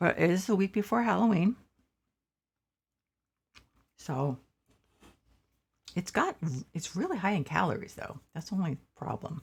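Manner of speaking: speaking with full mouth. Streamer welcoming viewers while eating candy corn, talking while eating. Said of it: "I apologize that I am eating candy corn".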